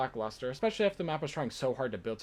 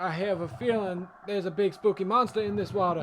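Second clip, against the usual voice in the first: put-on old grandpa voice, higher, louder; 5 semitones higher, 4 dB louder than usual. While playing through a game map, doing a grandpa impression. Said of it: "for this entire map I just did a grandpa impression".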